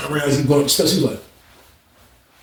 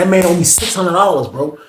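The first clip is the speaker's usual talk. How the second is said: ordinary delivery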